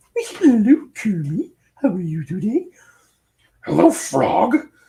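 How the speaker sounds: very high, loud diva voice. A streamer thanks viewers, then shows off a Miss Piggy voice. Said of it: "I got my Miss Piggy".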